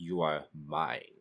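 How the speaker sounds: deep dragon voice. Imagining a dragon claiming someone as his, speaker tries a much deeper voice. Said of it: "a much deeper voice".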